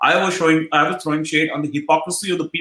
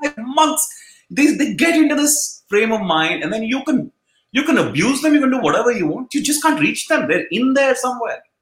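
voice lifted right up high; 7 semitones higher than usual. Imitating what a cricket coach used to say: high-pitched Justin Langer voice. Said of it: "I love the high-pitched voice that comes from Justin Langer".

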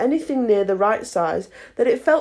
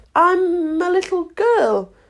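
rather doubtful, uncertain, much slower; 7 semitones higher than usual. Alice answers the pigeon's question, rather doubtfully. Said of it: "rather doubtfully".

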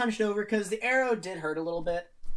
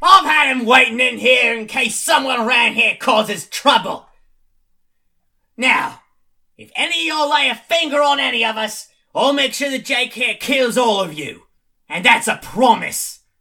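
very loud, booming, bellowing character voice; 3 semitones higher, 12 dB louder than usual. Voicing Lab, who calls out to the goblins: Lab's voice. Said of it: "you hear Lab say".

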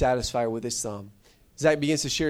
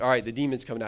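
usual speaking voice

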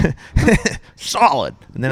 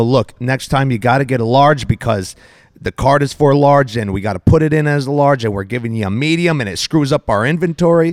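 plain

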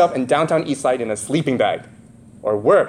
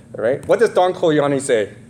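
normal talking voice

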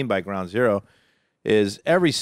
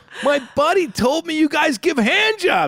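mock very high, mad, worked-up, insistent tone; 4 dB louder than usual. Retelling his own demand to the masseuse: imitating his own angry demand. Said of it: "And I started getting all mad".

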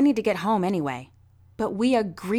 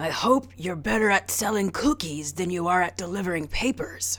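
raspy, low-pitched voice. Narrating a man's first words to Reggie and Henry as they sit down, low, raspy voice. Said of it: "he said in a low, raspy voice".

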